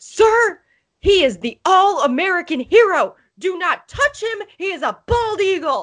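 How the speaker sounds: mock, very high, shrill drunken holler. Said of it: "very drunk, might I add".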